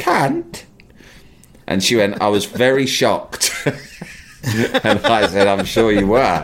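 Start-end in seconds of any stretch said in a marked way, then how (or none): 0.0-0.6 very high, lovely, sweet angelic voice. Imitating a woman saying a swear word, in a lovely angelic voice. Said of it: "in a lovely angelic voice. ... she was like this".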